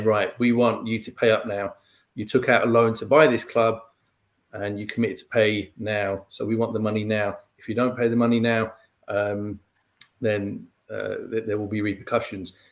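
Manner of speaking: normal talking voice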